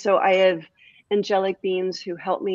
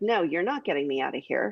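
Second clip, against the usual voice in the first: mock-angry tone, quieter; 2 semitones lower, 5 dB quieter than usual. Retelling what he said while he was mad, imitating someone mad. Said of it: "he was mad".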